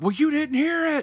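wildly angry, high and loud. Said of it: "crazy angry because I'm like".

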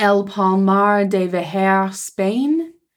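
put-on French accent.

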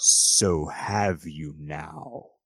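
loud, booming, menacing, intimidating voice. Narrator voicing a presence heard all around the players, in a booming, intimidating voice. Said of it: "this booming, intimidating voice".

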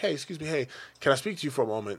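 put-on, extra courteous, very polite manner. Acting out walking over to talk to someone: put-on very polite voice. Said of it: "I'm very polite".

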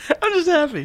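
giggly, laugh-filled speech, very high pitch. Answering why they keep giggling through the intro: laughing while talking. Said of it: "You're just laughing through the whole thing".

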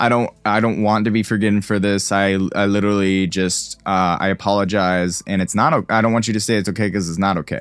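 normal talking voice

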